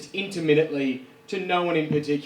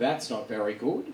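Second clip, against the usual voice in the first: muttered under the breath; 4 semitones lower, 6 dB quieter than usual. Recounting a pub comedy night, mimicking a woman at the back muttering under her breath. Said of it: "this woman under her breath goes".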